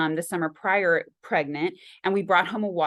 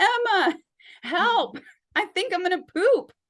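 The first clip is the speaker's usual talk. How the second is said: sudden, very high cry out; 13 semitones higher, 3 dB louder than usual. Recalling sudden labor pain in bed, calling to Emma: retelling a yell for help. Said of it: "I just yelled out".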